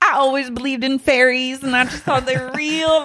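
put-on high, cute, innocent-sounding Southern accent. Imitating Brittany talking about fairies: imitating Brittany's Southern accent. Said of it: "when she's like".

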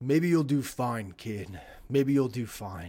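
solemn, grave, the anger spent. Voicing a defeated opponent lying punched into the ground: solemn. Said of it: "he seems solemn for a second and says".

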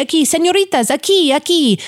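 re-enacted yelling. Recounting waking up and calling people over, retelling own yelling. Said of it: "And I'm yelling a key".

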